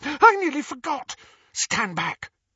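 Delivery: squealed, very high pitch. Narrator voicing a character reminded of a forgotten task, squealing. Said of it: "Hermione squealed".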